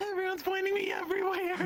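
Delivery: high voice, half-laughing half-crying, between laugh and sob. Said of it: "I can't tell if you're laughing or crying".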